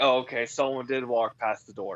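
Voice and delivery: ordinary talk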